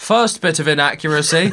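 loud, deliberate, drawn-out aside, acted out. Retelling a remark made during a film in the cinema: imitating a loud remark. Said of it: "loudly goes".

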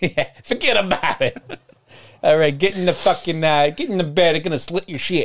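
put-on Boston accent. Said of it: "Now she's from Boston".

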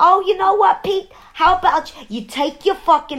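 put-on Queens accent. Retelling a movie scene where a woman snaps at Pete, in a Queens accent. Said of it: "He's giving her that accent".

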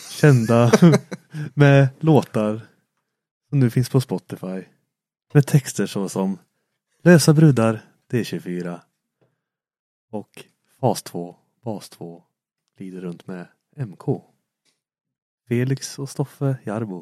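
on-air radio announcer and presenter voice. Introducing two guests at the start of the podcast, radio host voice. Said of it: "Du låter som en radiopratare".

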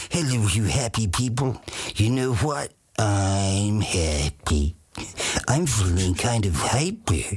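slow, stretched-out cartoon character voice. Recalling performing the cartoon characters grown up with: cartoon character voice. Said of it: "performing, you know, characters that I just grew up with".

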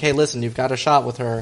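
normal talking voice

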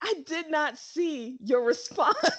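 slow laughter through tears. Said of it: "I got tears in my eyes".

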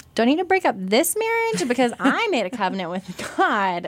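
put-on snide, faux-earnest, snarky, high sing-song tone. Recounting an email sent to the pastors, retelling a snarky question. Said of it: "I'm being snarky".

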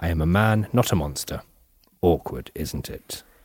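dark, sinister delivery. Repeating a quote from a documentary's audio tapes: imitating a sinister delivery. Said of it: "he says it in a really, ugh, sinister way".

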